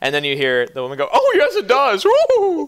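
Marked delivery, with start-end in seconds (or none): 1.1-2.7 very high, slow, drawn-out, affected, prissy posh drawl. Voicing a self-styled duchess agreeing with her husband: fancy prissy voice. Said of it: "weird little fancy prissy people".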